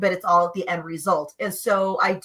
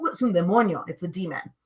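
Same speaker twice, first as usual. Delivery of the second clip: mock super casual, nonchalant tone; 3 dB quieter than usual. Retelling what Grandma said about something in the neighbor's car, mock-nonchalant. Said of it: "super nonchalant".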